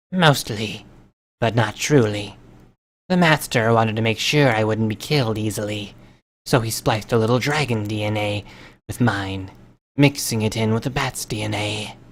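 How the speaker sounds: hushed, soft hissing through the words. A narrator reads her reply to a man aiming a shotgun, soft, hissing voice. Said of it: "said in a soft, hissing voice".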